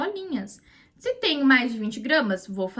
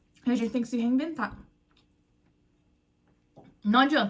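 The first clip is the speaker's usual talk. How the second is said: choking mid-sentence, nearly choking on the words. Speaker talking to viewers about her flexible day, nearly choking while speaking. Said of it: "quase me engasguei falando".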